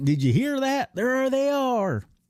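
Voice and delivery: very high-pitched southern Texas bumpkin drawl. Quoting a Stormtrooper's line in a southern drawl. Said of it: "He's got like this southern drawl".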